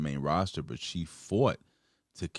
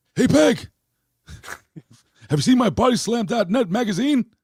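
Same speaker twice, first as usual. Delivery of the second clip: shrill, blaring holler, very high, at full volume; 12 dB louder than usual. Joking about a wrestling news site, doing an Al Bundy impression. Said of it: "That's my best Al Bundy I could".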